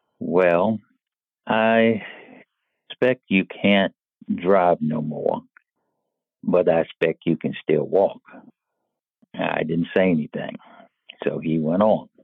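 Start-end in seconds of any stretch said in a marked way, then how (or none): 0.2-8.2 easy, gentle, drawn-out Southern drawl. Retelling a man's reply after the speaker lost driving privileges, soft Southern drawl. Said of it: "in his soft Southern drawl".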